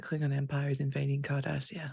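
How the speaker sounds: very quiet, low voice, barely audible. Narrator voicing Burrell as she delivers news to the group: very quiet voice. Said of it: "she just very quietly says".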